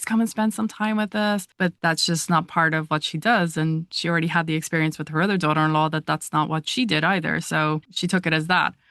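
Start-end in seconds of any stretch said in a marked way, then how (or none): 0.0-1.5 mock, high, imploring, begging tone. Retelling a request to the mother-in-law to visit: imitating pleading. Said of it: "I am begging and pleading".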